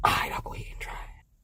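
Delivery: fast, hushed, unvoiced whisper.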